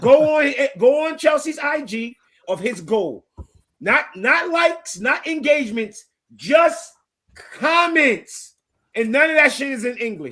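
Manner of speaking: loud, high, excited, hyped shouting.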